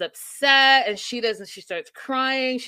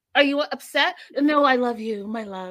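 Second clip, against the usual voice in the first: mocking, over-the-top, exaggerated affectionate lovey talk. Retelling how a couple talks before a fight: mocking over-the-top lovey talk. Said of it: "You guys sound ri-, ridiculous".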